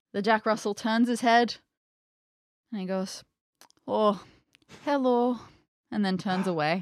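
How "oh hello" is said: put-on Russian accent. Telling how a Jack Russell turned its head, voicing the dog in a Russian accent. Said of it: "He's Russian".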